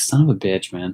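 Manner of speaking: ordinary delivery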